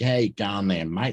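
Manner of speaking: put-on broad Australian accent. Explaining Australian accents, demonstrating the broad drawly Ocker accent. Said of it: "You've got the Ocker accent".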